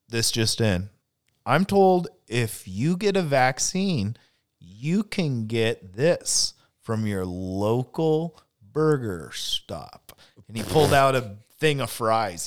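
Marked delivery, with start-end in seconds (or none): 0.1-10.2 slow, deliberate, formal, official-sounding announcing voice. Retelling a mayor's press conference announcement: imitating Bill de Blasio. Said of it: "He goes".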